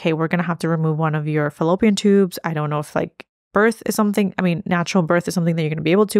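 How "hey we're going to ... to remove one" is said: ordinary delivery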